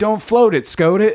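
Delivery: very high, loud, quippy slang delivery. Recalling a college acquaintance's odd replies, imitating Juno-style teen slang. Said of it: "this guy talked like he was a character in Juno".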